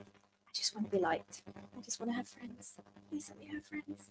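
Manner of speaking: very quiet, hushed whisper to oneself. Retelling the moment under the sorting hat, whispering to oneself. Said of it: "I'm whispering to myself".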